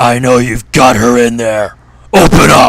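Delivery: enraged shouting.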